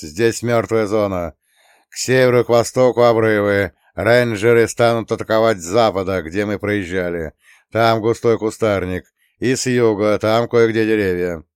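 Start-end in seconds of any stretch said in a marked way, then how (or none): none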